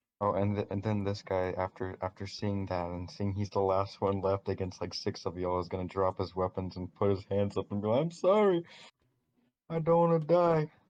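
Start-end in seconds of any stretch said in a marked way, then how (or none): 7.9-10.7 very high, shrill, terrified, pleading scream. Game narrator voicing a surrendering bandit who drops his weapons, screaming for his life. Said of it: "He's screaming for his dear life".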